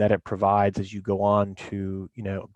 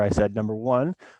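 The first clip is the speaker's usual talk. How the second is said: ordinary talk, nothing marked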